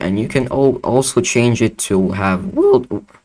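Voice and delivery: voice breaking and cracking mid-phrase. Showing viewers a plugin's texture options, voice cracking on a word. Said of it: "that was a terrible voice break".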